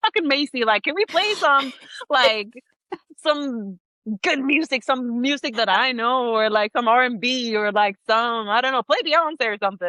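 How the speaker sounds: nagging, whining, pleading, complaining tone. Retelling past complaints about the listener's country music: mock complaining. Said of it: "I remember me complaining".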